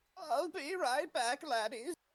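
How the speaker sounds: put-on very high-pitched little-old-lady voice. Speaking to the group before stepping away, in an old granny voice. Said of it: "you have a great granny voice".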